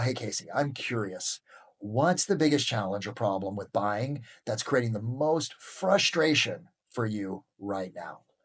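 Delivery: voice eased down a little, softened and gentle. Speaker demonstrates how to talk to a listener when moving in: softened voice. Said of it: "I soften my voice a little bit".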